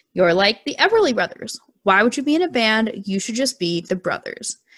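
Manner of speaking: plain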